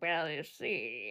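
very low, soft, murmured put-on character voice. Asked whose voice they're doing, the speaker shows it: Humphrey Bogart impression. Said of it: "It's kind of a Bogart".

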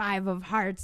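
creepy, eerie, unnerving voice. Retelling a scene where Cheryl guesses cards: imitating Cheryl's creepy voice. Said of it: "in a really creepy voice".

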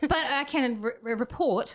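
high-pitched stammering. Starting a story to the others on the show, the speaker is stuttering. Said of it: "why am I stuttering?".

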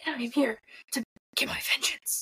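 gruff, growling vigilante voice. Discussing a character who prefers vengeance, speaking in a Batman voice. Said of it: "I get to use my Batman voice".

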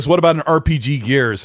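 ordinary delivery

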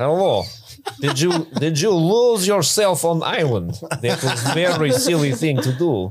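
put-on Russian accent. Joining a bit where a volleyball talks as a character: Russian accent as Wilson. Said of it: "Russian volleyball Wilson".

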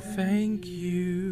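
faint, high, hushed spectral ghost voice. Narrating the game, the speaker voices the ghost answering a player's hug; ghostly voice. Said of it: "you hear a ghostly voice go".

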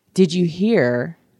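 put-on street whisper. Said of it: "he hears some whispers in the street".

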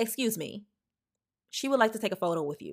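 very stern, firm, no-nonsense tone. Retelling telling a woman to take a photo with a girl, retelling a stern remark. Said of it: "And I said it very sternly".

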